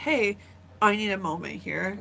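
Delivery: plain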